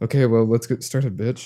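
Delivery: dry, flat, expressionless deadpan delivery. Recounting what she says when starting, the speaker imitates her deadpan delivery.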